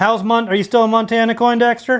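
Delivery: high yelling, carrying far. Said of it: "You don't have to yell".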